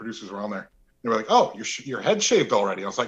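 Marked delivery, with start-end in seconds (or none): none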